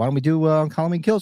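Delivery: ordinary delivery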